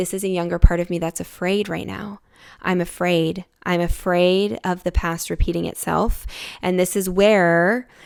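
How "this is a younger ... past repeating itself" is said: usual speaking voice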